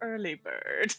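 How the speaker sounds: muttering under breath. Voicing a character writing in her journal: muttering under breath. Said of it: "muttering under her breath as she writes".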